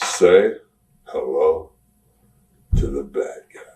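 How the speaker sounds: very slow, halting drawl broken mid-phrase. Retelling how he delivered a line after being told to talk slower, very slow delivery. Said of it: "I want you to talk even slower".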